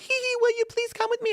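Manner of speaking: put-on very high, cutesy, giggling robot girl voice. Imagining a robot girl running up to a guy, giggly robot-girl voice. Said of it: "giggly waifus".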